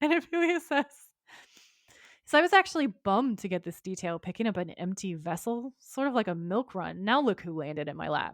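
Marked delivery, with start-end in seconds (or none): none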